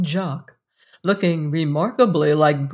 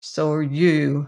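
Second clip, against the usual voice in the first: sullen, sulky, resentful, lower; 2 semitones lower than usual. Narrator reading a boy's retort to his mother, sullen retort. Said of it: "retorted Jock sullenly".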